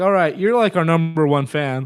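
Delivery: ordinary delivery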